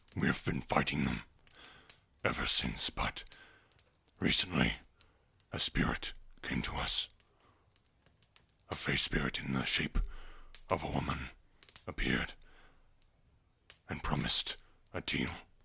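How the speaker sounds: silverback gorilla character voice. An armored silverback gorilla tells his apes' story, in a gorilla character voice. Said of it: "a silverback gorilla who wears some armor, / a silverback gorilla who wears some armor, has a giant maul. / "I am male." / But the guards around the tree stopped and told you that [name] wanted to spe".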